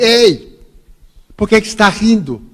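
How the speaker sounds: high-pitched shout. Retelling how a stranger in another queue called out: imitating someone shouting. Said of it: "alguém me olhou e gritou assim".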